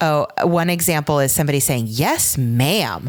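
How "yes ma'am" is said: acted-out patronizing, condescending, talking-down tone. Retelling a male student's reply to dance feedback: imitating a condescending tone. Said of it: "in a really condescending tone".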